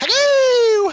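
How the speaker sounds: put-on very high-pitched, loud British accent. Imitating a Minecraft video maker the kids love: Stampy Cat British accent. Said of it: "He's got this great British accent".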